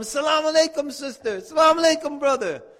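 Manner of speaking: play-acted joyful hollering, high-pitched. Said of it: "Why are you yelling like that?".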